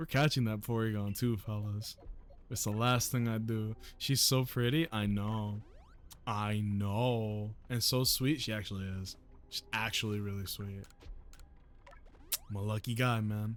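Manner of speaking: very low, hushed, secretive near-half-whisper. Talking to the fellas about her while catching a Porygon, in a lowered half-whispery voice. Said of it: "I'm lowering my voice like like I'm whispering".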